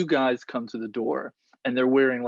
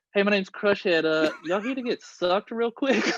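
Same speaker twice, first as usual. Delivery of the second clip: goofy, silly made-up dubbed voice, pitched higher; 7 semitones higher than usual. Retelling how he voiced people seen talking, in a dubbed-over voice. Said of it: "you do the voice for them".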